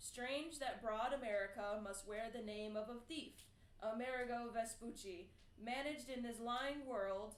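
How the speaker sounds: usual speaking voice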